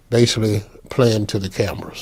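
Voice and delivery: ordinary talk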